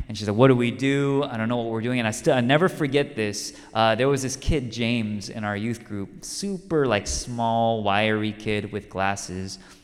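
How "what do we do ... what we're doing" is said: play-acted, fast, frantic, hysterical, tearful, overwhelmed. Retelling a companion stopped on the road: imitating someone crying hysterically. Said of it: "she's hysterical".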